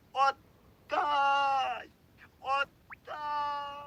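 very high, frantic, shrill, wild yell. He cries out at the woman holding something away from him, shouting frantically. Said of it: "надзвичайно закричав".

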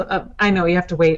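words rushed out very fast. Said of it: "I'm speaking too fast".

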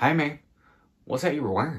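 put-on country Alabama deep South accent. Retelling how a man walked into the room and greeted you, imitating David's deep South Alabama accent. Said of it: "this is exactly what he sounds like".

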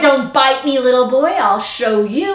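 plain reading voice

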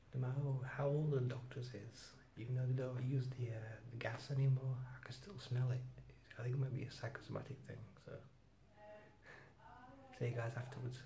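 quiet, low-volume talking. Waiting at the dentist, not wanting people to hear: talking quietly. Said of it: "I'm just talking quietly".

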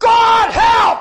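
shrill, very high, loud top-of-the-voice scream. Retelling a moment alone in a garage: retelling a scream. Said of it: "and I screamed".

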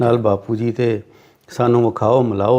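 ordinary talk

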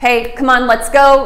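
authoritative, firm, loud coach voice, urging tone. Showing how to call an older puppy, firm authoritative coach tone. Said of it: "like real authoritative, firm, you know, move it, kind of track coach, football coach kind of tone of voice".

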